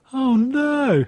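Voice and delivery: play-acted, high voice on the verge of tears. Retelling a scene where a character sees his bent ice pick: imitating someone about to cry. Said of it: "he kind of looks like he's gonna cry".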